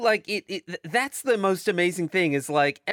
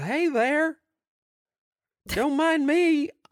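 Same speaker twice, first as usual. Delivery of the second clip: very high, homespun, folksy country voice; 10 semitones higher than usual. Imitating a politician who sounds like a shitty Wilford Brimley: Jeff Sessions impression. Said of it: "Real folksy".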